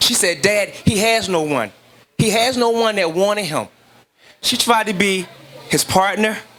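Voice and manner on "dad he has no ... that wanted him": normal talking voice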